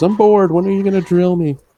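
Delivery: very high-pitched, seductive come-on voice. Quoting the hooker from Grand Theft Auto: Grand Theft Auto hooker voice. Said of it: "she goes".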